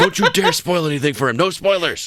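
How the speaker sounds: high, mock scolding yell. Retelling how his mom yelled from the background, retelling a mom yelling. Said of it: "Like yelling at him".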